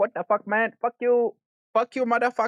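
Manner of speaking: very high-pitched, put-on Chinese accent. Showing how one could walk around talking: put-on chinese accent. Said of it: "talking with a Chinese accent like".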